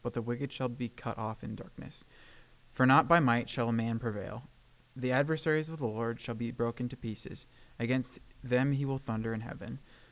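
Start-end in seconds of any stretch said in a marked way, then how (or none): none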